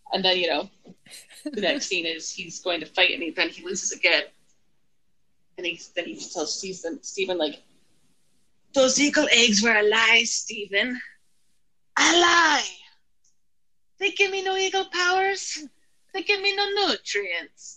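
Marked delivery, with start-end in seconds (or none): 8.7-17.8 full-on put-on Italian accent, high pitched. Retelling what a man in a movie scene tells stephen, in an italian accent. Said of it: "he just totally goes into, like, an Italian accent".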